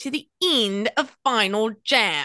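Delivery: put-on Australian accent. Called on for a quick line, the speaker delivers it in an Australian accent. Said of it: "It's Australian".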